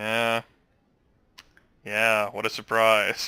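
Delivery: bone-dry, flat, slow deadpan with no pitch lift. A player voices the sheriff's expected reply to the Nosferatu's offer, deadpan. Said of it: "the sheriff is just gonna deadpan like".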